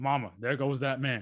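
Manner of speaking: said out loud, loud voice. Doing an impression of a basketball commentator after being asked: Mark Jackson impression. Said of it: "that's my Mark Jackson".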